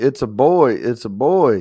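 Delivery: ordinary talk, nothing marked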